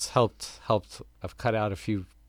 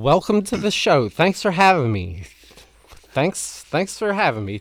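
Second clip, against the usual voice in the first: very loud, all-excited voice, pitched up; 7 semitones higher, 11 dB louder than usual. Greeting the radio show as a guest: talking loud and excited. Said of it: "You're talking all loud".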